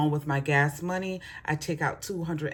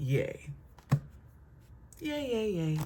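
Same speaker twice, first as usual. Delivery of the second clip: slow, breathy, whispered sarcastic fake celebration; 3 semitones higher, 7 dB quieter than usual. Reacting to a new fee added to rent payments: sarcastic. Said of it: "If you can hear my sarcasm".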